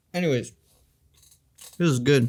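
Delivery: talking while chewing. A vlogger eats a fig bar while talking to viewers, mouth full, chewing. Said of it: "I'm eating the fig bar right now".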